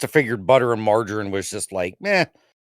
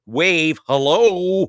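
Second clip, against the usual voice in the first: play-acted, sarcastic, taunting, pitched-up mocking tone; 7 semitones higher than usual. Retelling waving back at a driver who didn't wave: retelling own mocking greeting. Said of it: "I would do this mocking".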